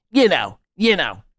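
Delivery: put-on quintessential northeastern Philadelphia guy accent. Mocking a guy from Philadelphia, the speaker imitates his northeastern Philly accent. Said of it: "that northeastern Philly accent".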